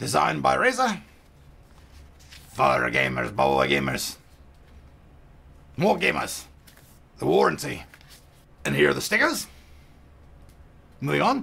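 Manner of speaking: put-on pirate accent all the way through. Unboxing a Tron mouse and reading out the box contents, in a pirate accent. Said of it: "why am I doing a pirate accent for Tron?".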